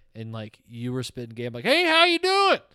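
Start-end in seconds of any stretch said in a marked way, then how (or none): 1.6-2.5 very high, loud put-on southwestern Pennsylvania accent. Mimic how the other person sounded on the podcast, to their face, in a put-on southwestern Pennsylvania accent. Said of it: "which is southwestern Pennsylvania".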